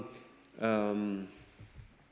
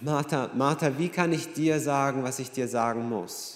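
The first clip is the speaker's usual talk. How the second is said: ordinary talk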